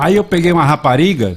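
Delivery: loud, high, comically exaggerated Northeastern Brazilian accent. Speaker explaining which Brazilian accent is funniest, doing a Northeastern Brazilian accent. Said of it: "o sotaque nordestino e as expressões. Olha, quando é muito mais engraçado se falar assim".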